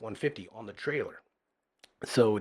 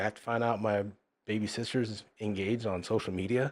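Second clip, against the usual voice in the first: usual speaking voice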